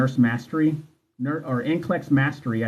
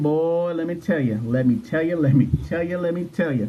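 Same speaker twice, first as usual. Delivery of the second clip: put-on country accent laid on thick; 4 semitones higher than usual. Joking about nurses' country accents, imitating one: put-on country accent. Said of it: "That country accent".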